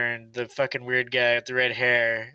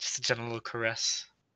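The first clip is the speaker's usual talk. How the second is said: soft, creepy in-character voice. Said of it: "I gotta be in character".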